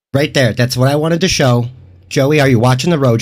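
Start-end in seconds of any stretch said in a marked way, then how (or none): none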